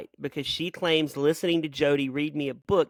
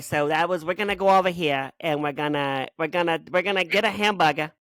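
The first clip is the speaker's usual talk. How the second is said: Massachusetts accent dropping R sounds. Showing the other speaker how Massachusetts speakers drop the R, Massachusetts accent dropping R's. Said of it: "so so the Massachusetts drops the R".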